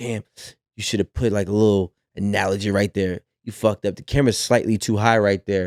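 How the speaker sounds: frustrated, self-scolding tone. Retelling self-talk while editing content: imitating own self-criticism. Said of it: "I'm actually beating myself up".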